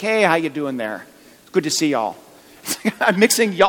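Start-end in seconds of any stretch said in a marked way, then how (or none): 0.0-2.2 put-on Wisconsin accent. Retelling walking into a flower shop in Wisconsin, Wisconsin accent. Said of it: "I quickly developed the Wisconsin accent again".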